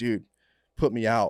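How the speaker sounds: slow, desperate, pained pleading cry in agony. Retelling what a buddy shouted in the back of the rescue: imitating a buddy yelling. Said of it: "my buddy's just yelling".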